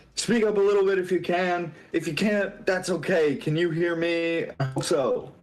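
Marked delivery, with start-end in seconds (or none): 0.2-4.5 high, top-of-the-lungs shout, as loud as possible. Shouting back to someone whose voice sounds muffled, shouting at top of voice. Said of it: "This is like at the top of my voice".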